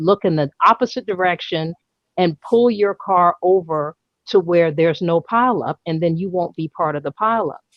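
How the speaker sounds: ordinary talk, nothing marked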